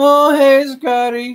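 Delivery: put-on very high, crinkly little old-man voice. Retelling a recording that kept playing, the speaker voices the greeting: crinkly little old man voice. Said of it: "this crinkly little voice, like a little old man".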